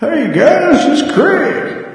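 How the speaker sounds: put-on aged old-man voice, pitched very high. Playing his future self through a time machine, older-sounding voice. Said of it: "you sound like you've gotten a lot older".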